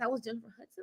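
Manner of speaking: very soft, breathed-out, hushed, stunned disbelief. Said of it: "and I was like".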